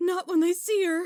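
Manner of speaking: outburst, sounding upset. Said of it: "Sky, calm down".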